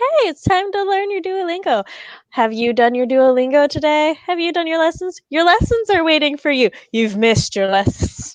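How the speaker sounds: gentle, sugary, passive, high-pitched voice. Imitating the Duolingo owl's lesson reminders: sweet passive Duolingo owl voice. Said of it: "really sweet and passive".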